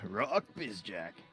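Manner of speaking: dramatic announcer-style delivery. Prompted by the other speaker, say a name in an announcer voice. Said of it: "in the announcer's voice".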